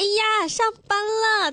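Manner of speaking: put-on very high, slow, sugary, cooing cutesy baby voice.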